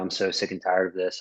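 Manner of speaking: normal talking voice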